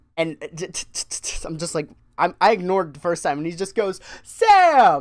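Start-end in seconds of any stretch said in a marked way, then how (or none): 4.2-5.0 very loud, very high, drawn-out top-of-the-lungs yell. Retelling a coworker calling out across the store: imitating a yell at the top of lungs. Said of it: "at the top of his lungs, Jonathan just yell".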